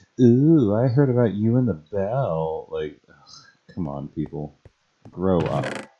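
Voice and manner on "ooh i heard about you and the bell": high, loud teasing taunt, stretching "bell". Joking about coworkers teasing someone over a date: teasing office gossip voice. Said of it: "without everybody in the office going".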